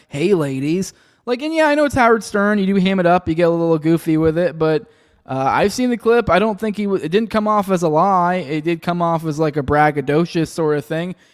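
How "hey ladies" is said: put-on creepy man voice. Retelling what Trump said on Howard Stern: imitating Trump as a creepy guy. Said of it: "kinda be like the creepy guy".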